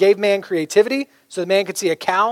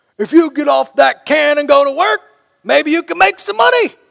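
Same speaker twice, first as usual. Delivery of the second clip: mock yelled-out outburst, loud and high-pitched; 8 semitones higher, 5 dB louder than usual. Retelling what a man with a walker yelled at the speaker, imitating him yelling. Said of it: "he yells at me".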